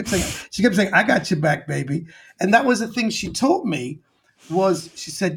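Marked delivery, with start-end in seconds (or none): 0.9-2.1 rough, creaky-edged talk-show host voice. Retelling what Whoopi Goldberg kept telling him: Whoopi Goldberg impression. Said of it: "I love doing an impression of Whoopi".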